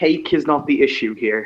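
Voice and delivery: stiff, programmed, machine-like robotic voice. Game master voices Gravedigger replying to a player, in his programmed voice. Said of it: "almost like a programmed voice".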